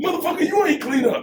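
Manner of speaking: play-acted cussing tone. Retelling scolding his woman at home: imitating himself talking harshly. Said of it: "watch how you talk to me".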